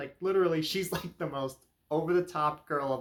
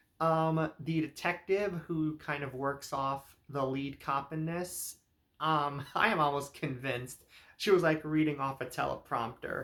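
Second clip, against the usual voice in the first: ordinary talk, nothing marked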